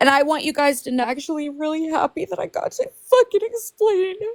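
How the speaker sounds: tearful happy voice. Telling everyone in a live conversation why they're crying, crying happy tears. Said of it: "I'm not crying out of sadness".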